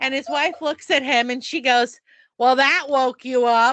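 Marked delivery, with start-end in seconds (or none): 2.4-3.7 acted, loud, carrying delivery. Retelling what a wife said to her husband at the movies: imitating someone saying it loudly. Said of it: "And she says it really loud".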